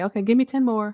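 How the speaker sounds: mock sweet encouraging tone. Recalling how the trainer asked for more reps, imitating a kind, nice voice. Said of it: "in a nice voice".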